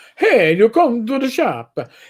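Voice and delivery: put-on weird not-quite-Italian vampire accent. An improv game master does a funny voice for a character, weird vampire-Italian accent. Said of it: "he has this weird accent".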